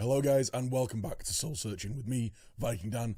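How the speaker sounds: voice almost gone, barely any voice left. Host welcoming listeners back to the show, voice almost gone. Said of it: "As you can probably hear by my voice, I have completely lost it".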